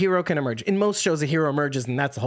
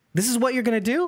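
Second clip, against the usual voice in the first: worked-up, lively, animated and pitched-up delivery; 8 semitones higher than usual. A player challenges another player's choice at the table, animated. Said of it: "I'm a little animated".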